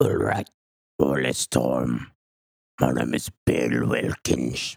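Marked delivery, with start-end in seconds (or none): 1.0-4.8 rasping, low, rough demon pirate voice. Asked to imitate the voice an 11-year-old supposedly faked: pirate-like demon voice. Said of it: "Kind of like Jack Sparrow meets like a demon".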